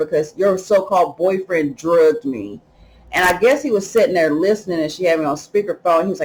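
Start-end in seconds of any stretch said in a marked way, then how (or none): none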